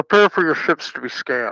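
garbled, distorted voice like a radio transmission. Voicing the hail the crew's ships receive, in a garbled voice over comms. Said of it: "it's garbled. So it kind of sounds like this".

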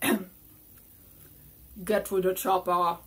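booming, drawn-out, dead slow celebrity voice. Saying the game's title as the designer says to pronounce it: Arnold Schwarzenegger voice. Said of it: "my best Arnold Schwarzenegger impersonation".

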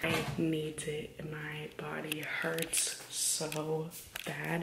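speaking in a whisper. Everyone in the house is still asleep, so the speaker is whispering. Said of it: "kind of whispering because everybody in this house is still asleep".

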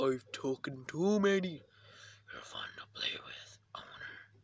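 breathy, whispered demon voice. Playing a game, voicing a character in a demon voice. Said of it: "I could do a different demon voice".

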